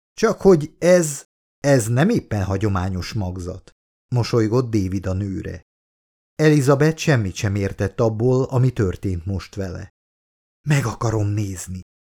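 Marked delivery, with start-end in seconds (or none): 10.7-11.8 in a hushed whisper. A woman, bewildered by her pregnancy, speaks to the android, whispering. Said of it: "suttogta az androidnak".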